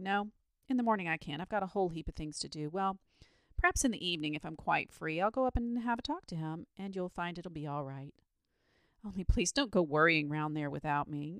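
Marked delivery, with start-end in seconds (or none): none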